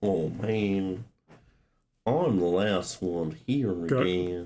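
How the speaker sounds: slow drawl, man drawn out. Reading a character's line aloud: Goofy voice. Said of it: "like, Goofy going on".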